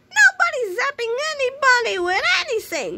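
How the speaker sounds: very high yell with swinging, swooping pitch. A woman shouts at two boys, shouting. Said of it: "shouted Miss Singerbrains".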